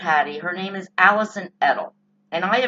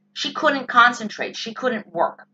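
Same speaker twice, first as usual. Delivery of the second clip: ordinary talk, nothing marked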